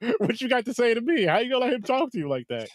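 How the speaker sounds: acted confident laughing. Acting out walking into the principal's office next: put-on confident laughing. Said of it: "walking in that damn door with some confidence laughing like".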